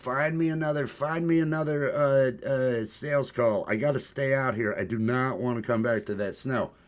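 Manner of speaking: imploring, begging, pleading voice. Retelling own past plea to be sent on another sales call: imitating own past begging. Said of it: "I was begging".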